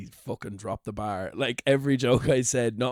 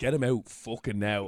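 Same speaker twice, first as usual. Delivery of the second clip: angry voice. Retelling what the manager said during the gig: imitating an angry manager. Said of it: "Like, angry".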